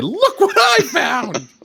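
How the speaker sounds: excited halfling voice, very high and very slow. Player voicing a halfling who lifts a key for the group, excited halfling voice. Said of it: "I'm gonna say".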